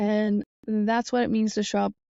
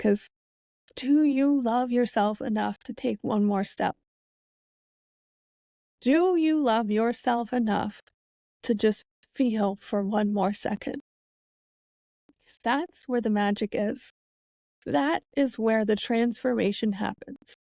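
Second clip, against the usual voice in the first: choked up, tearful voice, near tears. Talking to the listeners and tearing up while speaking. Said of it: "And I'm tearing up".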